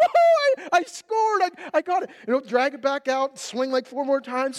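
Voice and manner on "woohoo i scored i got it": mock-excited cheer, much higher, louder, slower. Retelling how he celebrates after scoring, imitating his excited cheer. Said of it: "And he's all excited".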